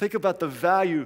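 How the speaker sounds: ordinary delivery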